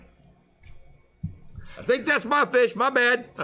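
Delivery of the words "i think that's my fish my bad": high, sheepish voice. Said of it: "I'm like".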